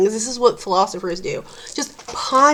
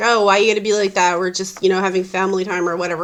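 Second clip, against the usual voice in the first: usual speaking voice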